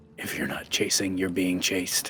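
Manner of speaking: hushed whisper. Speaking as the character Oban, whispering under his breath. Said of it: "Oban's gonna whisper under his breath".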